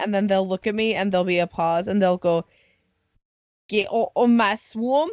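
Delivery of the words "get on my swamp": very slow, drawling Scottish ogre voice. Retelling campers answering a question about their accent, Shrek impression. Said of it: "they're just doing a Shrek impression".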